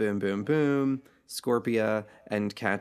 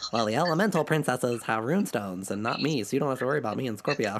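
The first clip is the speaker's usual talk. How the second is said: bad put-on cartoon voice, congested and sick-sounding. Recapping an episode, quoting what the character says, horrible I-have-a-cold Entrapta impression. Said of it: "my horrible I have a cold impersonation".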